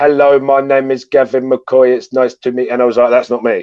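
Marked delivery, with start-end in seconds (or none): 0.0-2.7 stiff, flat, monotone robotic voice. Speaker recalls how he introduced himself after changing how he talked, robotic voice. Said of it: "I became very robotic".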